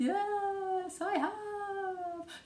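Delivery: high, spooky ghostly voice with yes stretched long. Answering a question about bringing a ghostly voice: ghostly voice. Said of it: "Have you brought your ghostly voice?".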